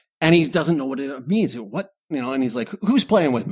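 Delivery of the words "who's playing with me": put-on riled-up, angry, demanding outburst. Retelling a movie scene, quoting the character hearing the voice: imitating someone getting mad. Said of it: "he gets all mad about it".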